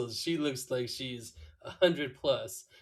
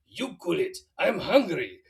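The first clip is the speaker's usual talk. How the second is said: pitched-up, loud puppet voice; 4 semitones higher, 5 dB louder than usual. Retelling a cartoon scene where Homer answers Marge, in Pedro's puppet voice. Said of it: "which is Pedro's voice".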